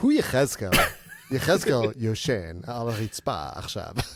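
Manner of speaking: put-on Israeli accent. Speaker imagines someone in an Israeli community calling out, put-on Israeli accent. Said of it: "You sounded like a Fabio kind of variation of Israeli".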